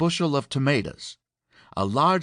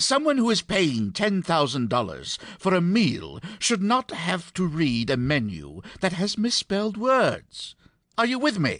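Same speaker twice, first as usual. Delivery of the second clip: put-on strong English accent, laid on thick, pitched up; 5 semitones higher than usual. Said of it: "in his thick English accent".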